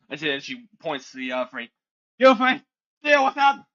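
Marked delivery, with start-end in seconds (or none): 2.2-3.5 very high, very loud, shrill feminine yell. Voicing a character ordering three others to attack: shouting in a more feminine voice. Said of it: "she shouts in a more feminine voice".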